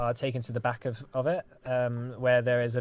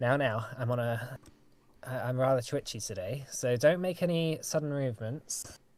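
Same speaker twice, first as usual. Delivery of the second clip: plain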